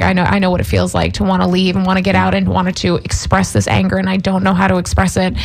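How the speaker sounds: normal talking voice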